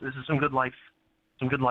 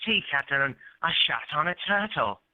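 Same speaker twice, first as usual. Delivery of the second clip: put-on old man voice; 2 semitones higher than usual. Doing an impression of an old actor for a caller: Michael Caine impression. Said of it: "He talked like this".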